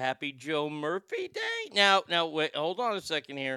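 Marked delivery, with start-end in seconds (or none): 0.0-1.7 slow, swooping, drawn-out anchorman voice. Reading aloud a message that asked to be read this way, Ron Burgundy voice. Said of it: "so I read it like that".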